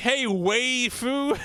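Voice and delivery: very bad, high, put-on Philadelphia accent. Retelling opening an interview with a greeting; bad philadelphia accent. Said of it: "my worst Philadelphia Val".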